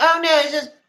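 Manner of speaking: loud, high-pitched scoffing voice. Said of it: "And he's like".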